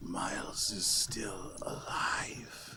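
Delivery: breathy, ghostly whisper from the grave. Narrating a story to players, the storyteller voices a dead character: Jade's whisper. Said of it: "whispers out".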